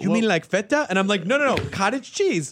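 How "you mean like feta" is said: affected, put-on Latin American accent. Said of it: "try to affect the accent and just in telling a story".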